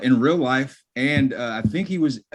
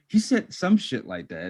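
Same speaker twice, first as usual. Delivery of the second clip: plain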